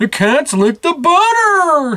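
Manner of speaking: whining voice, very high and slow. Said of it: "he whines at his mom".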